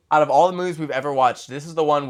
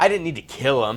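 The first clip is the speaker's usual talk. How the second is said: mock smug, boastful delivery; 2 semitones lower than usual. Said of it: "looks away to his dramatic pause, like".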